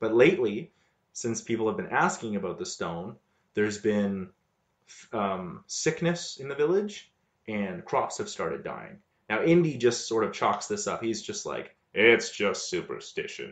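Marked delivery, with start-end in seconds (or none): 11.9-13.5 low, offhand, dismissive brush-off tone. Retelling what the hero says about the village troubles: low Harrison Ford voice. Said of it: "in his, like, low Harrison Ford voice".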